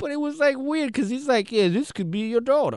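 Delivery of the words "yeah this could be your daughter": put-on terrible New Orleans accent. Describing a Tommy Lee Jones movie, quoting John Goodman's horrible New Orleans accent. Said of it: "he did like a horrible New Orleans accent".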